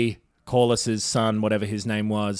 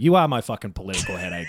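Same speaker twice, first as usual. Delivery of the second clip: ordinary delivery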